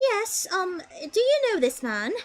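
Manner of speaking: put-on high fashionable British accent. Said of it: "a British accent".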